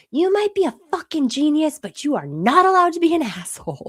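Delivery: mock fierce scolding yell, loud and high. Retelling yelling at him over spaghetti dinner: imitating own past yell. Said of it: "And I yelled at him".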